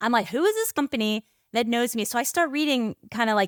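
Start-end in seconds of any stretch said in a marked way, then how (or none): none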